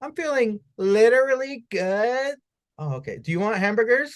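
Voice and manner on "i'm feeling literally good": put-on high-pitched Valley girl way of talking. Mocking how Valley Girls use literally, the speaker is imitating a Valley Girl. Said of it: "Versus a possibly Valley Girl".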